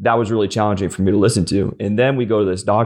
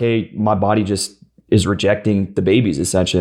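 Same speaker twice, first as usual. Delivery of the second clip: ordinary talk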